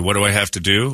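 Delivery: normal talking voice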